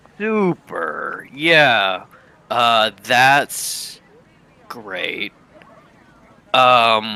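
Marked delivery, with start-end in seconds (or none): 0.2-5.3 unenthusiastic, unexcited tone. Answering in character to news of a movie in korea: unenthusiastic reply. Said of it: "You don't sound very excited".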